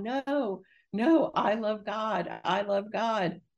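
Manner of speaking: mock high, very slow, very drawn-out scream. Recounting looking up to the heavens from the mirror, retelling her own screaming. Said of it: "I'm screaming and I'm going".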